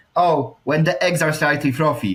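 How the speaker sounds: usual speaking voice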